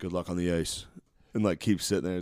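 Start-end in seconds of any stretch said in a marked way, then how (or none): 0.0-0.8 mock deadly serious delivery. Retelling what blackjack players say when you get an ace: imitating serious gamblers. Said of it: "real serious by themselves".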